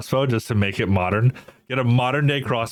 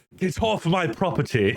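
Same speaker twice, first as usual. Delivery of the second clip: haughty, pompous put-on English accent, very slow; 7 semitones higher than usual. Describing how you have to act the part, give a pompous English accent. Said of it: "you have to have like an English accent".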